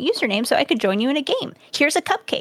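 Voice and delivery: plain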